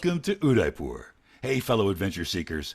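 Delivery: fast, rushed, pushy car-salesman patter. Reading a tour welcome in an audition: fast, pushed car salesman delivery. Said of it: "Sounds like a car salesman".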